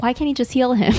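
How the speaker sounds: ordinary delivery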